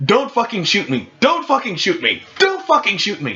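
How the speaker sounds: repeated high, swooping yell. Speaker retelling yelling at another player who is taking aim at them. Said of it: "I am just yelling at him".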